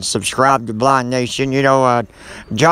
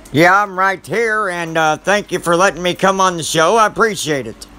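elderly put-on voice. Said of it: "So, Old Man Roger, are you still with us?".

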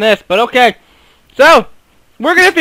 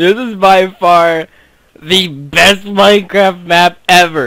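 slow, tongue-in-cheek, sarcastic tone; 3 semitones lower than usual. Signing off to viewers about the game map: sarcastic. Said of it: "If you can't tell my sarcasm".

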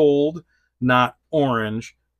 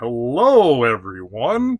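loud, big, swooping, sing-song cartoon-hero voice; 5 dB louder than usual. Speaker showing how He-Man sounds, doing a He-Man voice. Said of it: "He's all like".

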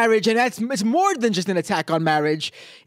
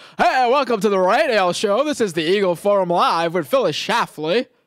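put-on happy-go-lucky, jolly old-timey radio announcer voice. Mocking the show's intro, speaker imitates its host: mock jolly old-timey announcer. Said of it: "That's the type of voice we got coming in to jolly".

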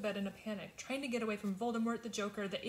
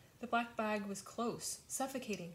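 usual speaking voice

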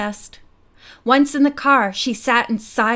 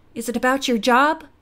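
usual speaking voice

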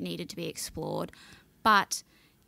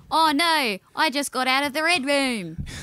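put-on Australian accent, high and raised; 6 semitones higher, 7 dB louder than usual. Joking as an Australian spy character, put-on Australian accent. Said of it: "I decided as an Australian to put on an Australian accent to say that".

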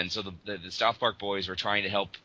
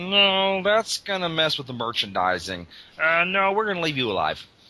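very high, loud, swooping squeak, "no" stretched out; 9 semitones higher, 4 dB louder than usual. Quoting George Lucas on the story decision, bad George Lucas impression. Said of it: "that's my really bad George Lucas".

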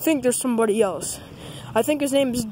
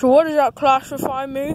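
rambling, dopey puppet character voice; 3 semitones higher, 4 dB louder than usual. A sock puppet character introduces itself, in Dog Christmas Sock puppet voice. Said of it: "my name is [name]. [name]. I'm a sock puppet".

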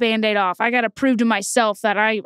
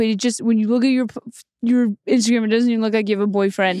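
put-on dumb-sounding guy voice. The speaker retells what their boyfriend kept asking, in a dumb-sounding boyfriend voice. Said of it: "When I do his voice, it makes me make him sound dumb".

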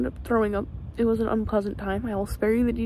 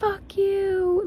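mock woman's screamed curse, higher; 9 semitones higher than usual. Retelling what a lady behind them screamed, retelling a woman's scream. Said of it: "she, like screamed".

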